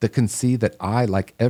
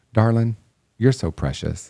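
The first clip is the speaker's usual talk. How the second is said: beautiful put-on Southern accent; 2 semitones higher than usual. Quoting a supportive woman's words to the speaker, in her beautiful Southern accent. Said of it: "in her beautiful Southern accent".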